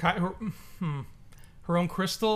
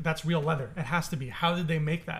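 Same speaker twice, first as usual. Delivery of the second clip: plain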